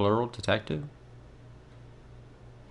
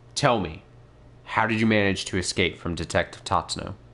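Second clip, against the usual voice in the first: ordinary talk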